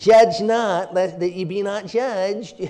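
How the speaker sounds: with a sneer. Quoting Matthew 7 the way people who never read it say it, sneering. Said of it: "say it with kind of a sneer".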